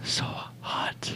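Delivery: breathless, soft, unvoiced whisper.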